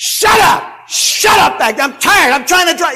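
shrill, high, very loud, furious screaming outburst. Retelling a childhood car trip, imitating his father screaming. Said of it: "he's screaming".

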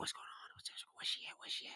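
whispering. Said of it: "Everyone was whispering?".

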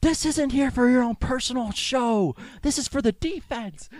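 play-acted very high, angry yelling. Retelling the coach's reply after trying to get the defense off guard, retelling the coach's yell. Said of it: "he just yells".

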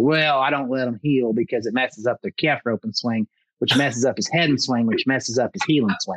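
plain

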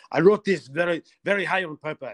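put-on impassioned high French accent. Recalling what the composer said while coaching us on the music, impassioned Claude-Michel Schönberg, French accent. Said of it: "he did it in a French accent".

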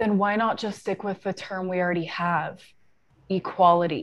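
faked, put-on dude voice. Reading out a man's argument from a conversation: imitating a dude's voice. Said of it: "I'm trying to sound like a dude".

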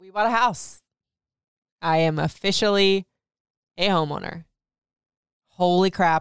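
nearly tearful, holding back emotion. Announcing to viewers a house was bought, holding back emotion. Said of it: "I'm trying not to get emotional again".

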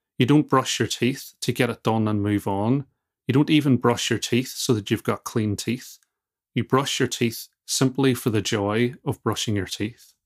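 usual speaking voice

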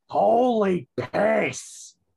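loud, high, creaky, rough, squeezed-out yell. Reacting to a scary story scene: Gilbert Gottfried voice. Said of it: "Permission to use my Gilbert Gottfried voice?".

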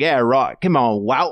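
bad, unconvincing, terrible put-on British accent. Imitating British cycling fans slagging a rider: terrible British accent. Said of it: "That's a terrible British accent".

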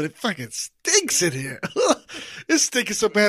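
New York accent slipping out, Brooklyn. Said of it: "it's giving me an accent".

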